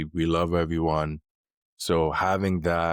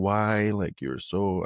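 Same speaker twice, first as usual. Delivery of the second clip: shouted, higher; 3 semitones higher than usual. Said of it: "I started shouting and, like, raising my voice".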